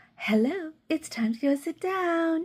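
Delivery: put-on high, funny baby-talk voice used on toddlers. Describing talking to kids all day at work, high-pitched voice for kids. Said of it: "that funny, you know, high pitched voice you talk to kids in".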